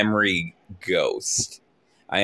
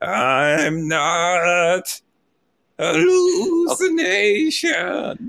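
very slow, drawn-out, ghoulish ghost voice; 8 semitones higher than usual. Playing a memory ghost yelling that it is not a hallucination: ghoulish ghost voice. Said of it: "in memory ghost form, sort of ghoulish".

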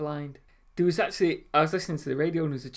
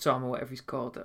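plain

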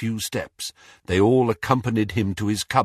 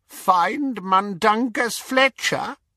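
very high, croaking voice; 11 semitones higher than usual. The elf answers the boy asking for his help, croaking Kreacher voice. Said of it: "he croaked".

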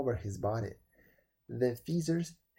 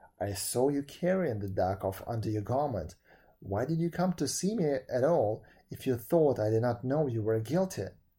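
ordinary delivery

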